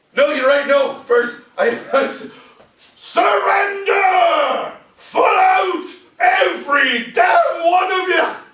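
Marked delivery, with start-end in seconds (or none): 3.0-8.4 loud screaming, high-pitched and rising. Telling the Governor how the unit surrounded a farmhouse, retelling screamed commands. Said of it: "I'm screaming".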